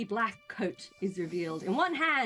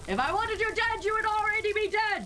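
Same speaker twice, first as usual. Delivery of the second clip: booming voice, much higher pitch; 13 semitones higher than usual. Narrating a scene, the storyteller voices a figure near Ariel, booming. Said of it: "his voice booms out".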